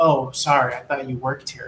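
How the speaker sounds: plain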